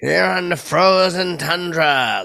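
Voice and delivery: booming, slow, high, drawn-out call. Showing an impression he pitched doing: Pat Summerall impression. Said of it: "I would do Patty Summerall".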